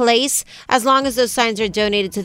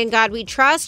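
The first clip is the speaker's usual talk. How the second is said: ordinary talk, nothing marked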